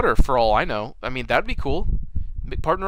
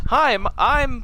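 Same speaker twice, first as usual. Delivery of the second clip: put-on talking doll voice, higher; 12 semitones higher, 3 dB louder than usual. Retelling a horror movie scene where the doll speaks: Chucky in doll mode. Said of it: "the Chucky kinda looks around in doll mode".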